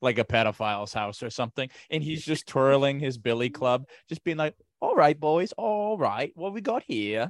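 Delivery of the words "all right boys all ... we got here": put-on old-time British policeman voice, pitched up. Acting out a 1920s British bobby twirling a billy club: put-on 1920s British bobby voice. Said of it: "British English Bobby".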